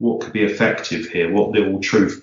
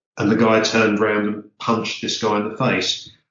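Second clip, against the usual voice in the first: ordinary talk, nothing marked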